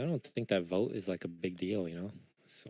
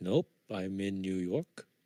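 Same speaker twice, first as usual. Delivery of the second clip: slow, unhurried, deliberate put-on Indian accent. Retelling a phone scammer's reply, imitating an indian accent. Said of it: "with the Indian accent".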